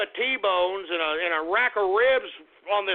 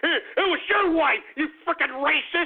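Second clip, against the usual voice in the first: slow, angry, upset, pissed-off outburst; 7 semitones higher than usual. Speaker mimicking a young man's outburst, imitating him sounding pissed off. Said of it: "he really sounded pissed off".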